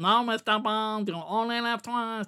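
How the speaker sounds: understated, creepy villain delivery. Criticizing a film villain by imitating his line: Blofeld impression. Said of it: "This guy, you know".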